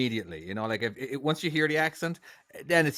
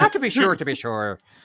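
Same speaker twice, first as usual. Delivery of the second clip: fake stock Irish accent; 5 semitones higher, 9 dB louder than usual. Showing how people sound when they put on an Irish accent, put-on Irish accent. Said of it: "trying to put on an Irish accent".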